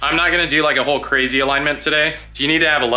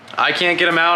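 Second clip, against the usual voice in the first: plain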